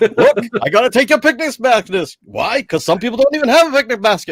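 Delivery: loud, very high-pitched character voice. Playing the Bernie Sanders of Yellowstone after Yogi Bear turned into him, Bernie Sanders impression. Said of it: "The Bernie Sanders of Yellowstone".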